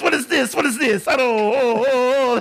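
high, bad Italian accent. Imitating a video game character, stereotypically bad Italian Rabbid Mario voice. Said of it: "stereotypically bad Italian".

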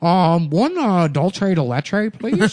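put-on nerdy voice. Retelling a customer ordering donuts to friends: imitating a nerdy customer. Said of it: "a big, fat nerd wearing Tevas".

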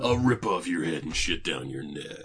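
voice dropped as deep as possible. Speaker quoting a line from a boss fight, trying for Duke's low voice. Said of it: "I cannot make my voice go down that low".

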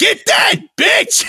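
mock squeaky cry, very high-pitched yelp. Imagining someone egging Shaggy on in the studio, imitating Shaggy screaming. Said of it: "can you scream a little louder?".

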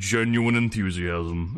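low, totally flat, dead-level, emotionless monotone. Imitating an alien that names the emotion before speaking: monotone Elcor voice. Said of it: "their voices are all monotone".

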